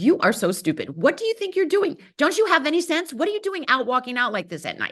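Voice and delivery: harsh, cutting, berating voice, high and swooping. Speaker voices the negative voice in your head; mock harsh inner critic. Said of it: "this harsh critic voice that's like".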